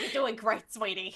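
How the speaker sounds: put-on tipsy woman's voice. Describing a voice, the speaker imitates a drunk aunt at Christmas. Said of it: "like the drunk aunt at a Christmas".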